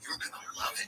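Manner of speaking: threatening, menacing delivery. Retelling how locals greet newcomers: imitating a threatening tone. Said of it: "they say it in the most threatening way".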